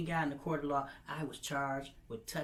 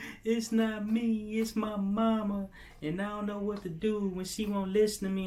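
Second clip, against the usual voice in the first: acted high, loud, tearful sobbing; 6 semitones higher, 7 dB louder than usual. Retelling how she turned around at the exit: imitating someone crying. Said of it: "she just turned around crying".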